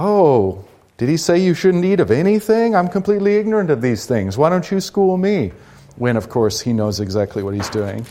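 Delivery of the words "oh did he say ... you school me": high, passive aggressive serpent voice with feigned innocence. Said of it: "kind of doing a passive aggressive".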